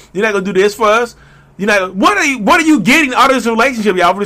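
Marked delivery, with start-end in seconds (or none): 1.6-4.3 yelling, higher and slower. Speaking to listeners about staying in a toxic relationship, yelling. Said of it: "I'm yelling".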